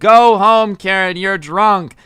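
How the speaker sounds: loud scream, dragged out and repeated. Retelling how a man kept screaming at a drunk woman: imitating someone screaming. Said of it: "screaming over and over again".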